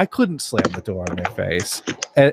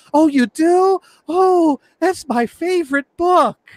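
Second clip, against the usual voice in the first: very high-pitched, drawn-out, gushing excitement; 13 semitones higher than usual. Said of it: "she was so excited".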